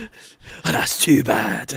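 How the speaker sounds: hushed, breathy bad-cop style voice. Switching from the friendly quote: Liam Neeson bad cop impression. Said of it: "He was both good cop and bad cop".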